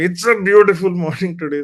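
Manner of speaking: loud, cross, angry delivery. Explaining an exercise to a group, the speaker demonstrates the sample line in an angry tone. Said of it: "In an angry tone".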